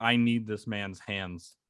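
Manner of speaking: straight-faced, flat, expressionless deadpan delivery. Speaker voicing a character who turns to the detective inspector, completely deadpan. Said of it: "just completely deadpan".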